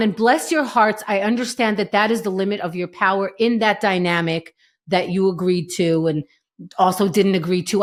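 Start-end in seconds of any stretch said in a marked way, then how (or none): none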